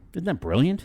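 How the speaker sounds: sarcastic. Reacting to an AI's praise of an episode: sarcastic. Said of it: "I'm being sarcastic".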